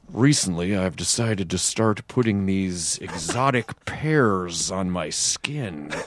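very deep, low, slow, deliberate put-on delivery. Imitating a man who makes anything sound interesting: Offerman impression. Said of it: "it's a really good Offerman".

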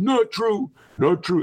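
very high, squeaky, badly done put-on voice. Quoting what Donald Trump says, in a bad Donald Trump imitation. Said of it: "That's my really bad Donald Trump imitation".

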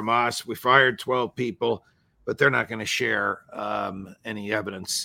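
normal talking voice

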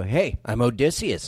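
acted proud, self-pleased delivery. Retelling how a friend introduced himself: imitating Odysseus, proud of his name. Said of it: "he'd say it in a way that he's, like, proud of his own name".

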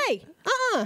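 high, sassy suburban-mom voice. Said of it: "kinda got my little, mm, little fire up my butthole and was like".

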